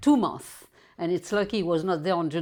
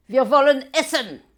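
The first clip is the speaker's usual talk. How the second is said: very nasty, loud tone in German; 7 semitones higher, 8 dB louder than usual. Retelling soldiers out of the ditches speaking to his grandmother, in a mock very nasty tone. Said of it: "in a very nasty tone of voice".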